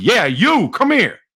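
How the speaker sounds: put-on high, called-out New Jersey accent. Recalling a man yelling across a room at him, imitating Tony's New Jersey accent. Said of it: "he had a New Jersey accent".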